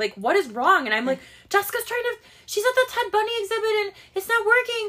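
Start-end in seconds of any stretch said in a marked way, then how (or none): 1.5-4.9 mock furious yelling, very high-pitched. Retelling her answer when her husband came upstairs asking what's wrong: retelling being mad. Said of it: "I'm yelling because I'm so mad".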